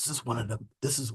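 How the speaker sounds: very quiet, hushed, barely voiced whisper. Speaker demonstrating something on screen, whispering. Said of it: "I don't know why I'm whispering".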